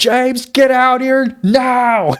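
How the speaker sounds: loud, high-pitched put-on shout. Retelling family members at the door calling for james, imitating relatives shouting. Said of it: "start shouting outside your door".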